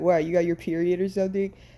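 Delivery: put-on tone of speaking in disgust. Retelling the mother's reaction to the first period: imitating mom speaking in disgust. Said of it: "she just looks at me in disgust".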